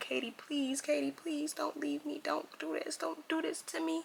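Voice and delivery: high, tearful, desperate crying. Retelling holding the dog and begging it: retelling own crying plea. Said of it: "I was crying".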